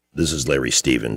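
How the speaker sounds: put-on deep voice.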